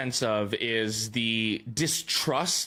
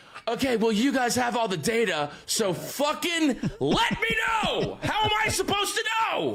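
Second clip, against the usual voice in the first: play-acted exasperated angry rant, very high, climbing; 11 semitones higher than usual. Retelling a driver's team radio after a bad strategy call: imitating Lewis Hamilton angry on radio. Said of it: "I haven't seen Lewis Hamilton this angry on the radio".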